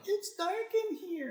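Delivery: put-on eerie, very high, hushed ghost-child voice.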